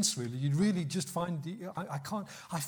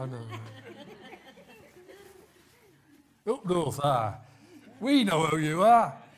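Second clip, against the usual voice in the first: very loud, slow put-on Scouse Liverpool accent; 7 dB louder than usual. Voicing the northerners of Galilee who claimed to know Him, in a Liverpool accent. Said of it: "I should do a Liverpool accent".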